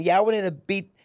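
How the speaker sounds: raw, high, loud, rough-edged voice. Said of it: "that's how she was speaking".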